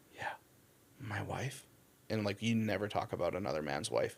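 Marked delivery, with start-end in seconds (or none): 0.2-1.6 low, soft, breathy confiding whisper. Retelling what a Pashtun man said about his girls: imitating a whisper. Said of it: "whispered it to me".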